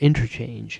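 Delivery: leaning heavy stress on the word interchange. Explaining music modes to you guys, stress on interchange. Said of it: "I really stressed the word interchange there".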